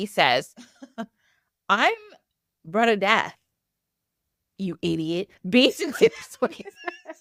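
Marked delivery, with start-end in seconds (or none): 1.7-5.3 put-on low, deep, rasping old-man voice. Retelling what an old man said, in a deep, raspy, slow voice. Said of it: "He says it in a deep, raspy voice and real slow".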